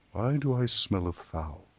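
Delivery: put-on smooth, mellow delivery. Retrying the line after the other speaker says it wasn't mellow enough, put-on mellow voice. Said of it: "your voice it wasn't mellow enough".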